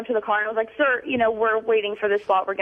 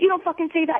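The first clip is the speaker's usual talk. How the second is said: put-on aggressive man voice, higher pitch; 6 semitones higher than usual. Retelling how a man came at her with his finger in her face: imitating an aggressive man. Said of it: "he comes in with his finger pointed in my face".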